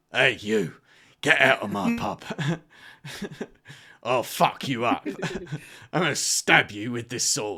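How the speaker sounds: put-on loud, barked tough-guy English accent. Friends chatting, one speaker doing a Jason Statham impression. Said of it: "It's like Jason Statham".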